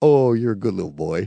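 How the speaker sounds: put-on talking-down tone. Imitating a reviewer: mock talking down to a child. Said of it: "he's just talking down to that little kid in the park".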